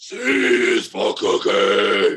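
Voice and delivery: bellowed big and loud. Showing the second screaming vocal style: Cookie Monster voice. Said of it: "or you're a Cookie Monster".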